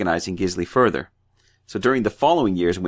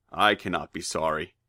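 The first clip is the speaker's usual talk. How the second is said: bad put-on cowboy voice, quieter; 2 semitones lower, 7 dB quieter than usual. Voicing Gisli taunting Thorgrim after a ball throw: John Wayne impression. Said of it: "You have the worst John Wayne impression".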